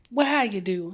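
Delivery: put-on Southern belle accent. Greeting everyone after being introduced, in a Southern belle accent. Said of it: "Where did the Southern Belle accent come".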